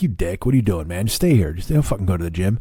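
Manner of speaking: put-on old man voice. Speaker quotes the old man who lives in his head: voicing that old man. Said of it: "there's an old man who lives in my head".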